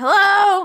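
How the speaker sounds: very loud, high, obnoxious calling out. Player's character knocking at a door, calling hello obnoxiously. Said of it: "Really obnoxiously".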